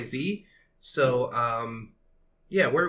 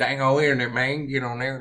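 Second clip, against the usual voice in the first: loud, belted, funny cartoon voice; 5 dB louder than usual. Chatting about funny voices, doing a Boomhauer impression. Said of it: "That's a funny voice".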